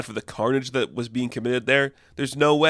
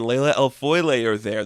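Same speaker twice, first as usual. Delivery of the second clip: usual speaking voice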